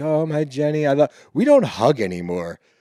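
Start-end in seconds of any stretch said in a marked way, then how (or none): 0.0-1.1 mock tipsy sing-song voice, pitched higher. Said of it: "He's a little lit".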